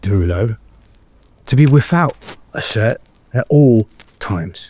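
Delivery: spoken in a British accent. Reading a contract aloud after being asked to use a British accent; British accent. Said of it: "read your contract in the British accent?".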